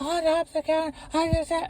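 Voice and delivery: shrieking, very high and hysterical. Retelling how she reacted to the mix-up: imitating her screaming. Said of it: "starts screaming".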